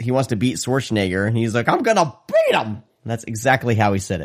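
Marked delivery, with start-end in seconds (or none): 1.7-2.7 voice breaking up, very high. Retelling a man training with his dad, imitating his voice cracking. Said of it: "his voice cracks".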